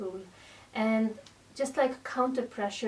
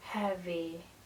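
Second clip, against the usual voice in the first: deep, calm, soft and steady; 4 semitones lower, 5 dB quieter than usual. Explaining a focus cue for the muscles, the word heavy in a deep, calm voice. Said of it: "heavy with a deeper voice".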